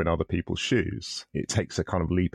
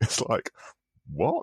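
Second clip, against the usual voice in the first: normal talking voice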